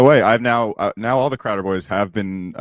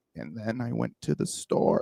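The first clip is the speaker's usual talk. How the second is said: soft, humble, modest voice. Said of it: "he does that fucking voice that you pointed out".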